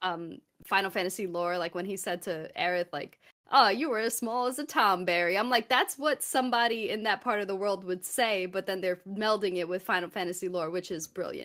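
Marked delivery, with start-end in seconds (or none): 3.5-5.4 put-on Texas cowboy accent. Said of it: "Western cowboy accent with like Texas accent".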